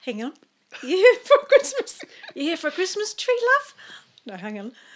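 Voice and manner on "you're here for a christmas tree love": put-on Kiwi accent, higher, louder, slower. Retelling how a lady on a bike greeted them at a Christmas tree farm, Kiwi accent. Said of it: "That's my Kiwi accent".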